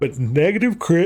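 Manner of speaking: talking mid-yawn, words stretched through a yawn. Explaining which stats to roll for, speaking through a yawn. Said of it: "I'm just yawning for no reason".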